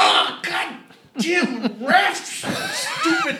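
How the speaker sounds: shrill, very high, swooping angry griping rant. Imitating the father-in-law heard watching a game, mock-angry ranting at refs. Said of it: "we get mad because of the one blown call".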